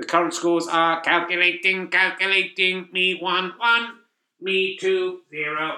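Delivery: flat, monotone machine announcer voice. Announcing the current scores of the players: robot voice. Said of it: "Thank you there, robot voice".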